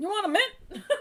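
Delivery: put-on high-pitched old man voice. Introducing an old man character named Bert and his catchphrase: old man Bert voice. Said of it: "your old man voice".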